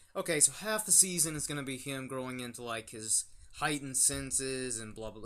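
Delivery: normal talking voice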